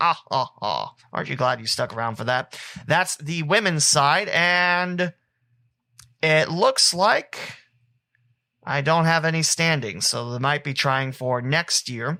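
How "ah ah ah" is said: bad mock vampire voice, laugh sinking low. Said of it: "Here's my bad count impersonation".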